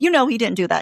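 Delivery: screaming, yelling. Retelling reacting to a book character: screaming at a character. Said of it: "I'm sitting there screaming at her".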